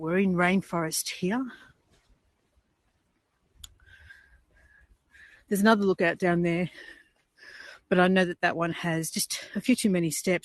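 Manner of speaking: huffing and puffing, out of breath. Walking through rainforest toward lookouts, talking to viewers, huffing and puffing. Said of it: "I'm huffing and puffing at the moment".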